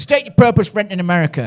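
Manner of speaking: put-on American accent. Telling a story, quoting the woman who stopped him on entering America, in an American accent. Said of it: "She said it with an American accent".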